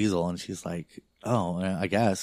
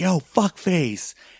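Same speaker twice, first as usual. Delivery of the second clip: put-on woman's scream, higher and louder; 10 semitones higher, 6 dB louder than usual. Retelling a movie scene, the girlfriend starts screaming: imitating a woman screaming. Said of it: "just starts screaming".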